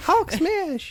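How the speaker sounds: very high-pitched, loud shout in toy voice. Imitating the little plush Hulk toy: imitating Hulk plush toy. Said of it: "his Hulk smash is Hulk smash!".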